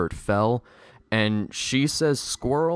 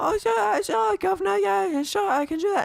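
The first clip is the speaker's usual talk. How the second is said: high, put-on British accent with eager yeses. Imitating an actor agreeing to drop the British accent: imitating Asa Butterfield in a British accent. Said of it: "And Asa would be like".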